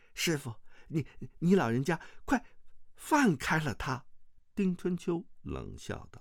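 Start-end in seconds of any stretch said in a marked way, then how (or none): 0.1-4.0 hurried, higher pitch. Azi speaks up quickly to her master, who holds her, said hurriedly. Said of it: "忙道".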